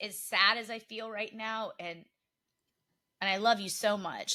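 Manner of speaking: tearful, choked-up, crying voice. Talking to the other host about something from three episodes ago, crying while speaking. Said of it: "I'm I'm I'm crying".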